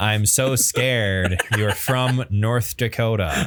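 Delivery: plain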